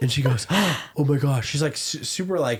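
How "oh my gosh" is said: play-acted startled, panicked alarm, as if just woken. Retelling how someone woken by a late call answered: imitating a panicked voice. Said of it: "she answers in a panic".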